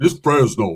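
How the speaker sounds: big, very deep voice. Speaker imitates a friend from Fresno answering staff and cops; imitating a friend's deep voice. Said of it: "he had a big ass deep voice".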